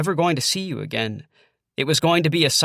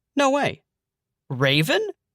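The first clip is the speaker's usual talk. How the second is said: high, stunned, incredulous, surprised voice; 6 semitones higher than usual. Narrator recognizes a familiar voice from the snack aisle, incredulous. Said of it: "I say incredulously".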